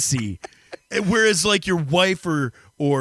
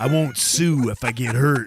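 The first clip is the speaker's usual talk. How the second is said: ordinary delivery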